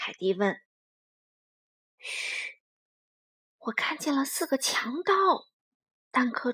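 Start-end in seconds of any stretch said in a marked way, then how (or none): 2.0-5.1 hushed whisper. Peeking through a window and turning to report what he sees, whispered. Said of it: "转头小声说道".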